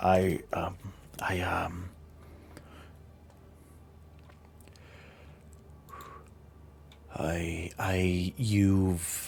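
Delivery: barely audible, whispered, halting stammer. Marcia, exposed before the other coven members, stammers for a second: stammering. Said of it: "She stammers for a second".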